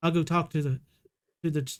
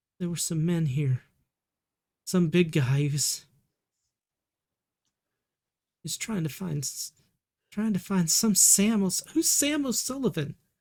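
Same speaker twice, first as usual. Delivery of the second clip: quavering, shaky, trembling voice. A mother finally answering her child's worried phone call; shaky voice. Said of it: "she answers in a pretty shaky voice".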